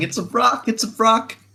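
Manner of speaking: very high, half-screamed voice. A player, running his character thirty feet away, speaks in character: sort of screaming. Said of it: "while still like sort of screaming".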